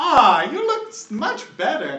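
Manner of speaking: put-on very high, swooping, slow, grizzled old-lady voice. Voicing a grizzled old lady healer greeting a player: grizzled old lady voice. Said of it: "And she goes".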